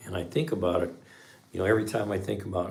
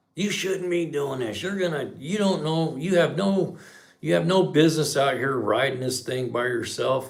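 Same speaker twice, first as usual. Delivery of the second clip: loud, high-pitched scolding rant with false starts; 7 semitones higher, 6 dB louder than usual. Retelling how a neighbor started yelling at the speaker, imitating someone yelling. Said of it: "she starts yelling at me".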